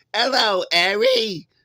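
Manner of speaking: dreadful fake British accent, very high pitched. Mocking an actress's accent in a film remake: imitating a horrific british accent. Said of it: "her British accent was horrific".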